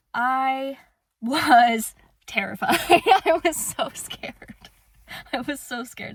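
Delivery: talking through nervous laughter. Telling how DCF came to the house, laughing while talking. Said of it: "I don't know why I'm laughing".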